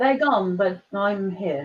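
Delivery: mock somber, gloomy, downbeat delivery. Repeating another speaker's words back to them: imitating a downbeat tone. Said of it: "The way you said that".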